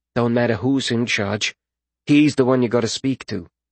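plain

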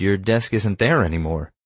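plain

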